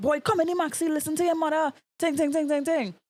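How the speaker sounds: put-on high-pitched, scolding yell. Retelling how everyone on the maxi yelled at a boy, imitating passengers yelling. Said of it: "everybody on the maxi starts like yelling".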